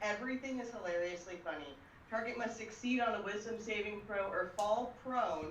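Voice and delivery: ordinary talk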